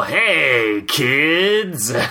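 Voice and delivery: put-on creepy, crusty clown tv announcer voice. Describing how a tv show's announcer talks, in a creepy crusty clown announcer voice. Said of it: "I'm the creepy announcer that sounds a bit like an off-brand crusty clown".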